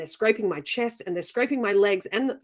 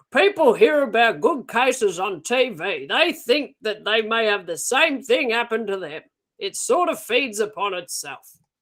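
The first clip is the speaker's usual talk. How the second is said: fake Australian accent, grating on purpose; 3 dB louder than usual. Reading aloud a researcher's quote about alien abduction, in an annoying put-on Australian accent. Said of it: "That's an annoying accent".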